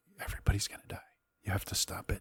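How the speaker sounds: put-on hushed whisper in a small boy's voice. Describing what a voice keeps saying, whispering like a young boy. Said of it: "he's whispering for some reason".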